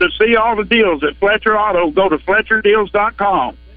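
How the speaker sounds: fast commercial announcer voice. Offering the group one more impression: fast Fletcher Auto ad impression. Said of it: "He's got to slow it down a little bit".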